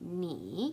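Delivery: ni said with third tone, dipping low then rising. Mandarin lesson on ni, meaning you: third tone on ni, dip then rise. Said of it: "N I with the third tone is ni".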